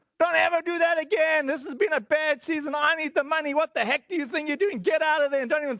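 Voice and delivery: mock yelling. Retelling how the snowplow guy yelled after the driveway was cleared, imitating someone yelling. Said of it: "he started yelling at him".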